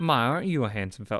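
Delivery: put-on Southern woman's accent throughout. Voicing the security officer called as a witness, with a southern woman accent. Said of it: "now I'm getting a southern woman accent".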